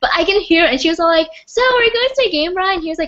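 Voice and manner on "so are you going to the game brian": high, shrieky screaming. Retelling a girl's loud phone call to Brian; imitating Taylor screaming on phone. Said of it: "she was screaming on her phone".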